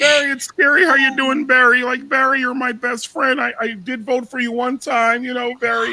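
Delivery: high, loud, blubbering fake sobbing. Mocking a man who cried when others made fun of Obama: imitating someone crying. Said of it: "he cried when they made fun of Obama".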